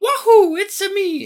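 very high, loud, slow, drawn-out whoop. Imitating how the Mario actor will sound in the movie: Mario voice. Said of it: "He's gonna be like".

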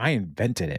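ordinary talk, nothing marked

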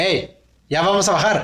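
mock shouting. Retelling how the driver wakes sleeping passengers: imitating a driver shouting. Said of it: "te van gritando así como de".

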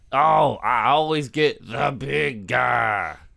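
very slow, drawn-out comic voice, every word stretched. Complaining about the film's opening scene: Martin Lawrence impression. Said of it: "Was that your Martin Lawrence impression?".

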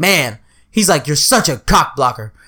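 low, grumbling complaining voice.

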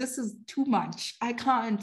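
mock crying, slow and tearful, pleading tone. Recalling hard times, speaker acts out calling friends, retelling crying. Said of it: "I would call my friends".

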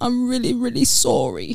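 high crying voice, pitch swooping up. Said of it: "We're laughing at my accent".

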